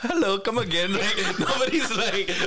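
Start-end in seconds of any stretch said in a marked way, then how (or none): 0.0-0.9 exaggerated put-on Indian accent, pitched up. Describing how people imitate the accent, the speaker does a mock Indian accent. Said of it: "do the Indian accent".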